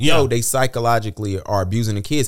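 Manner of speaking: ordinary talk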